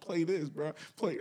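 put-on American accent. Retelling a keyboard player's directions in the studio: imitating an American accent. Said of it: "He has, like, the American accent".

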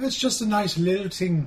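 attempted Irish accent. On a St. Patrick's Day podcast, a host tries the other's way of speaking, attempting an Irish accent. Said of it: "teach everyone how to speak in that way".

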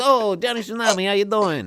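very high-pitched tough-guy mobster voice. Retelling a man greeting Hawaiian Steve as Johnny Tsunami: Tony Soprano impression. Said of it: "he said it like Tony Soprano".

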